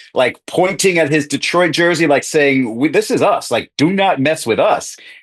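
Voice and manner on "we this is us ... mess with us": ordinary talk, nothing marked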